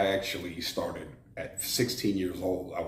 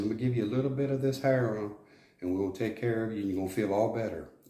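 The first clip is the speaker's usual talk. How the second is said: put-on sweet, soft Texas accent, higher pitch; 4 semitones higher than usual. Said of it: "With that Texas accent, real sweet and soft".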